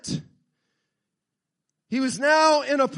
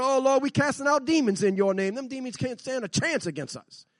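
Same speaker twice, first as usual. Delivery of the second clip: plain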